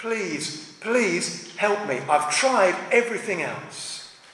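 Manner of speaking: acted-out begging, mock pleading tone. Speaker acting out a man on his knees before Jesus, acting out begging. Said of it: "All he can do is beg".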